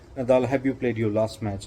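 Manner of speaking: plain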